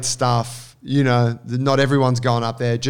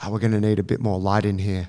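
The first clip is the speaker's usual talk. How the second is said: low, muttered aside, half to himself; 4 semitones lower, 3 dB quieter than usual. Retelling what the director of photography said on set: imitating someone muttering. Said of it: "you could hear him muttering".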